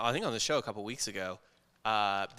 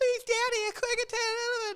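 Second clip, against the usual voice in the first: mock-pleading child voice, much higher. Father acting out his imagined future son's plea, imitating son pleading. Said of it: "And he starts crying".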